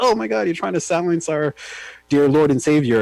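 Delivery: high, complaining outcry. Imitating his base complaining about a backlash: imitating people crying out. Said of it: "his base crying like".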